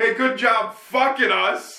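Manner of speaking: put-on high yell. Retelling yelling at a driver parked in traffic: retelling own yell. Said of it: "to which [name] then yells".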